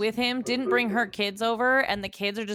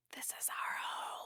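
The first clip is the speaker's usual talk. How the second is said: very soft, breathy, barely audible whisper. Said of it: "with that whisper".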